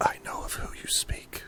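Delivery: very quiet, hushed, breathy whisper. Narrating a game, the speaker voices a woman answering the player, whispering.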